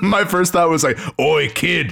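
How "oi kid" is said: rough, gruff, tough-soldier voice. Describing a game tutorial where you meet a soldier: imitating a gruff soldier. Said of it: "a gruff soldier who's like".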